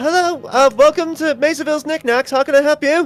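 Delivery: youthful-sounding voice. Narrating a shop scene, voicing the greeting heard at the door; young voice. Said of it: "you hear this young voice go like".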